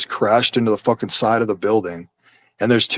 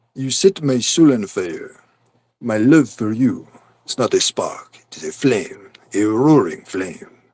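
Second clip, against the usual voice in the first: drawn-out cartoon-style French accent. Asked to do a skunk impression, speaker does a Pepe Le Pew impression. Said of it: "I can do an impression of a skunk".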